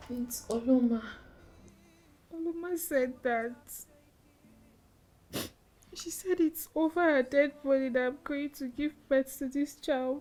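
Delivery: tearful. Telling her husband what Oloma said, crying. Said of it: "Why are you crying?".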